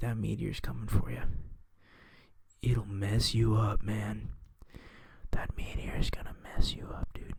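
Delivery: put-on ASMR whispering. Speaker doing a joke bit, mock asmr whisper. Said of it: "Those are my A S M R noises".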